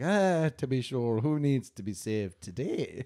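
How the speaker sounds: slow, cartoonish Irish leprechaun mouse voice. Showing how a cartoon audition role would sound: irish leprechaun mouse voice. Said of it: "for a cartoon where I was to play, like, a Irish leprechaun mouse".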